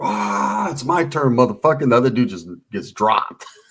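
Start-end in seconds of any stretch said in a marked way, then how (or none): 0.0-1.8 mock, slow, drawn-out, bellowed war cry. Retelling a slap fight where a fighter gets his turn: imitating a scream. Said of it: "he screams like this".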